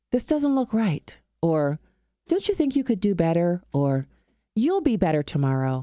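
polite, mild, professor-style librarian voice. Speaker describing what Jesus did not say at the temple, librarian voice. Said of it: "say in a librarian voice or a professor voice".

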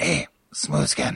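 put-on ghoul voice, breathy and whispered. Improvising a scene, a player calls out to another in a ghoul voice. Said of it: "I got the good uh the good ghoul voice".

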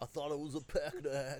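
imitated stoner voice. Voicing a stoner in a parka at a funeral on screen: imitating a stoner. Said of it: "Look at this fucking stoner over here".

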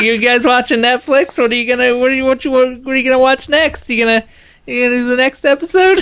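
high-pitched cartoonish voice. Retelling a character who asks about watching the next episode: like a Rick and Morty character. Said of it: "you just kinda sounded like".

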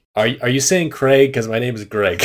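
ordinary talk

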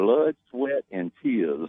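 put-on Southern storyteller voice. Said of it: "[name] impression you got there".

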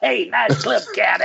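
mock loud-mouthed heckler voice. Speaker recalling walking up a hill at his first Masters, imitating loud-mouthed hecklers. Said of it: "all these loud-mouthed gobshites".

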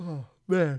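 speaking through a yawn. Speaker with a baby at home breaks off mid-point, yawning. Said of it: "that's why I'm yawning".

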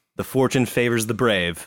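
plain

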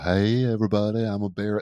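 put-on barracuda sea-creature voice. Joking about fish, giving a barracuda its own voice: barracuda voice. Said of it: "That's my barracuda voice".

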